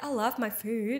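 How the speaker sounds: normal talking voice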